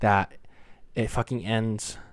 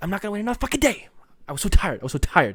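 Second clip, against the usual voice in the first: whisper-scream, much higher; 9 semitones higher, 3 dB louder than usual. Speaker with family nearby, not wanting to yell and cuss, whisper screaming. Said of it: "the reason why I'm whisper screaming".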